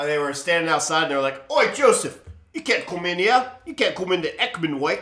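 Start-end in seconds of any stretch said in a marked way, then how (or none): 1.5-5.0 mock Cockney accent, pitched up. Retelling people standing outside, shutting joseph out of the church: mock cockney accent. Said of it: "Everyone in England is Cockney".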